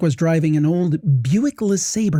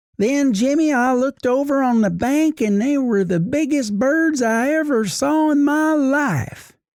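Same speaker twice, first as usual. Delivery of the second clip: put-on light Southern accent, lightly done, pitched up; 9 semitones higher than usual. Retelling what his mom said as dad drove down the road, semi-Southern accent. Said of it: "I'll give it to you in her, her uh, semi-Southern accent".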